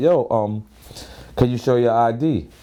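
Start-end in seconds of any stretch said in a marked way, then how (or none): none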